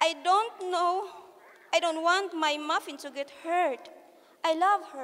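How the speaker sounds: ordinary delivery, nothing marked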